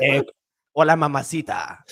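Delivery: clumsy, hammy put-on Spanish, like a comic. Saying a Spanish line when asked to speak Spanish: stand-up comic's hammy Spanish. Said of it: "That sounded like a stand-up comic that doesn't speak Spanish".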